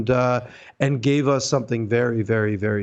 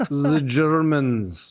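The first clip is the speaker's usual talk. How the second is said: clumsy, bad put-on German accent; 3 semitones higher than usual. Saying a cabinet was made in germany: terrible german accent. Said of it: "That's a terrible accent".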